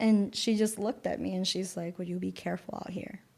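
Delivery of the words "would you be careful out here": mock-hushed voice, much quieter. Retelling a woman's reply after being told they were protected, in a hushed voice. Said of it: "it was in a very hushed voice".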